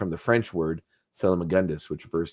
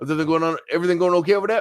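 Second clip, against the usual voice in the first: very high voice, rattled off very quickly; 10 semitones higher, 4 dB louder than usual. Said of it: "he said it really fast".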